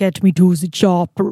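put-on Austrian-style accent. Asked to talk like Arnold Schwarzenegger on the podcast: Arnold Schwarzenegger impression. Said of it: "tell people what's on the podcast in Arnold Schwarzenegger".

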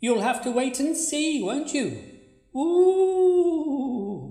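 slow, spooky ghost voice with drawn-out "ooh". Teasing the other speaker about the afterlife, trying to spook them: put-on spooky ghostly voice. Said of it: "spook me out with your ghostly voice".

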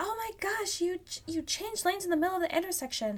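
put-on angry yell. Recalling rolling down the car window at another driver, retelling an angry yell. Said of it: "I yelled at him".

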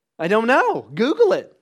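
put-on high, loud child voice.

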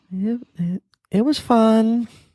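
very high, very slow, halting, stumbling impersonation. Imitating the other speaker answering "any parting words": Nora impersonation. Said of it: "It's my Nora impersonation".

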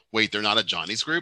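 ordinary talk

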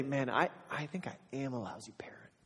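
hushed, soft, unvoiced whisper, despairing and defeated.

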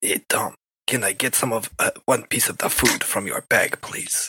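speaking in a whisper. Sneaking up beside Tom in the game to ask for food: whispering.

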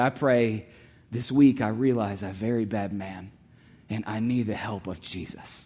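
slow, tearful broken English. Retelling what a student said after praying, imitating tearful broken english. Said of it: "through tear-stained cheeks and broken English".

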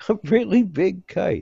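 very high, drawn-out words bubbling with laughter. Answering someone's doubts about the idea, laughing. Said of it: "Why are you laughing at the kite?".

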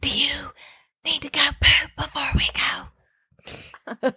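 very slow, loud, carrying stage whisper. Retelling how grandma talks when she cannot whisper: imitating grandma's loud whisper. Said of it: "my grandma can't whisper at all".

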